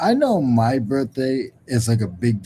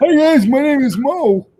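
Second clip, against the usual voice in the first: squeaky, very high, loud, slow drawn-out voice; 13 semitones higher, 6 dB louder than usual. Introducing himself to viewers as the other speaker: Mo impression. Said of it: "that's your Mo impression?".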